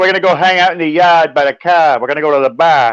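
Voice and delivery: put-on Boston accent with dropped r's. Talking about Boston, doing lines in a Boston accent. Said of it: "Boston is crazy".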